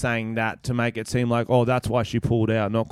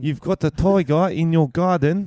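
mock South African accent, higher; 6 semitones higher, 3 dB louder than usual. Doing a South African accent for a joke: put-on South African accent. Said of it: "let us know what you thought of our accent".

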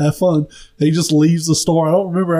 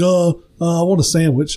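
mock slow, dazed, spaced-out stoner voice. Retelling a man coming into the store for a sandwich, imitating a high guy. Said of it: "just high as shit".

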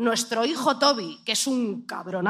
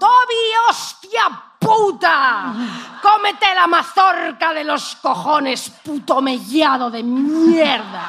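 loud, shrill, exasperated shouting; 6 semitones higher, 8 dB louder than usual. Speaker recalls yelling at five-year-old Toby over his dinner, retelling a yell. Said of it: "Y ya grito".

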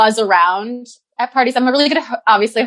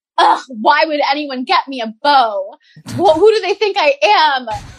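mock scornful, offended, disgusted disbelief; 4 semitones higher than usual. Retelling own reaction to a gifted bow at a party: imitating own disgusted past self. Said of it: "being like".

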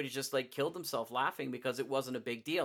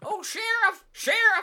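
put-on loud, high old-prospector holler; 10 dB louder than usual. Quoting a Blazing Saddles line: Gabby Hayes-style western voice. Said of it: "those kind of Gabby Hayes characters".

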